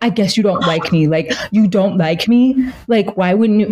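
acted, tearful pleading through crying. Retelling how he reacted after she refused him: imitating him crying. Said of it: "he starts crying and he's like".

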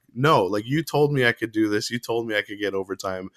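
normal talking voice

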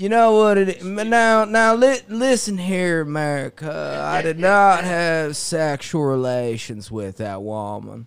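slow delivery with the word "now" stretched out. Showing the group his own impression, a Matthew McConaughey–Bill Clinton voice. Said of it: "Mine's like a weird combination Matthew McConaughey".

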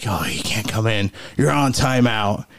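put-on, imitated thick, dark voice. Retelling what an employee told a guy; imitating a thick, dark voice. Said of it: "like really thick voice".

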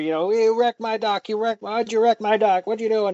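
put-on grumpy, feisty, cantankerous old man voice. Retelling the grumpy old man confronting Ash over his wrecked dock, imitating a grumpy old man. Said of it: "he's full of piss and vinegar".

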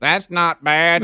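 put-on robotic voice. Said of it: "you sounded like a robot just said".

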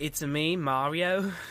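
put-on British accent. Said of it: "Just be like".

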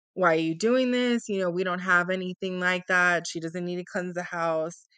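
put-on mocking tone. Retelling what her mom said about the cleansing: imitating a mom mocking. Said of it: "she was kind of mocking her and laughing and saying".

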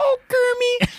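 high-pitched puppet pig voice. Asked to do it again, the speaker says the line in Miss Piggy voice. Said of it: "You do your Miss Piggy".

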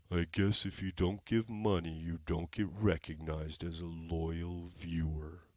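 acted glum, downcast, gloomy mopey voice. Reading a viewer's chat comment aloud, put-on mopey, gloomy voice. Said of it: "I'm going to read this in the voice that I read it in my head".

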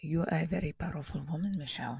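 bad put-on Latin accent, man's voice. Speaker retells a man's words to Michelle, in a bad Latin accent. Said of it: "that's not the best accent".

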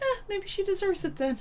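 high, callous scoffing. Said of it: "I'm always like".

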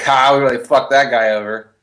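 gleeful chortling, chuckling through the words. Voicing two dead characters joking about the man they wronged, chortling while talking. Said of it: "they can just chortle together".

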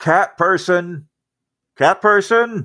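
high, hollered call, sounding far off. Game narrator voices a character calling from elsewhere in the ship, Lorndon hollering from afar. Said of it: "hollering from somewhere else inside the ship".

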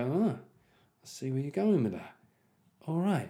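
calm, soft, slow, knowing tone. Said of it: "enough to just go".

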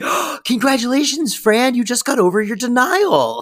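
thrilled, very high-pitched gushing excitement. Recapping a sitcom scene, the speaker quotes the doctor, imitating an excited doctor. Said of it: "the doctor very excitedly going".

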